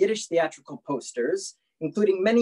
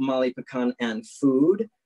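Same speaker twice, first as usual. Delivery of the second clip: ordinary talk, nothing marked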